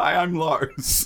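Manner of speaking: crying, tearful voice, spoken through tears. Retelling a contestant answering Sigurd after the show, imitating Lars crying. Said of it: "he's crying and sigurd comes to check on him".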